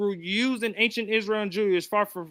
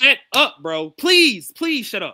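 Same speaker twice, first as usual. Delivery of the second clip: full, loud shout, fed-up; 6 dB louder than usual. Late at night, telling someone who keeps interrupting to stop, yelling. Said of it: "I'm yelling with you, bro".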